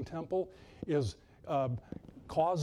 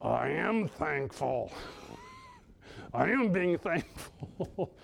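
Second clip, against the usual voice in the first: strained, very slow, through gritted teeth. Retelling how a man answered about being thankful, through gritted teeth. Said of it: "with gritted teeth".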